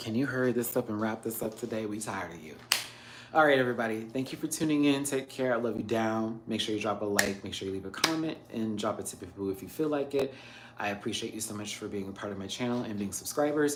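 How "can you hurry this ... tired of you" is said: cat character voice. Speaking for the cats about ending the stream: voicing the pet cats. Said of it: "They're also probably like".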